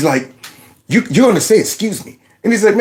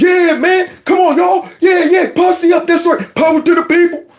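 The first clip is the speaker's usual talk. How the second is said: very high, level, swaggering put-on voice; 11 semitones higher than usual. Recalling when the brothers came over, speaker rallies them: put-on soul brother act.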